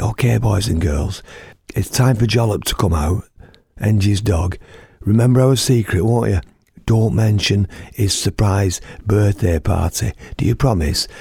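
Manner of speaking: put-on whisper. Retelling a children's show, imitating a presenter whispering to the audience. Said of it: "she whispers down it".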